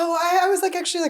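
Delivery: high, quaky, shaky nervous stammer.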